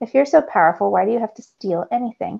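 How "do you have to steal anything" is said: ordinary delivery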